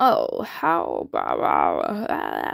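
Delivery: very low, slow, soothing, raspy dog voice. Retelling what a dog said in a show, soothing raspy dog voice. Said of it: "like a little bit of rasp, but it was so soothing".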